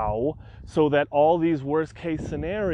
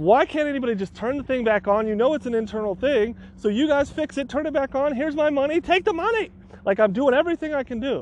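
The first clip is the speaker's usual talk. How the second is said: mock, very high, exasperated, fed-up, frustrated screaming; 10 semitones higher, 3 dB louder than usual. Speaker reenacting yelling at customer service people, retelling own frustrated screaming. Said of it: "I'm screaming at customer service people, super frustrated".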